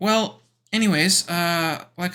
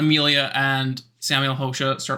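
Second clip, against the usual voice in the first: ordinary delivery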